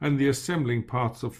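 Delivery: ordinary delivery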